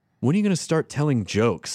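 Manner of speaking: put-on cold, rude, curt tone. Retelling what a guy sitting next to her said: imitating a cold, dickish tone. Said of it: "he just looks at me really coldly".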